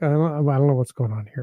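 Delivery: ordinary delivery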